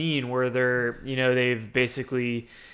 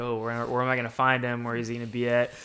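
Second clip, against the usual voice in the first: ordinary talk, nothing marked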